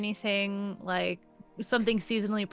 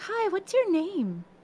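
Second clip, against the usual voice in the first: much higher, slower voice; 11 semitones higher than usual. Speaker shows crouching down to greet someone as if a kid; talking to a little kid. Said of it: "you know when you talk to a kid".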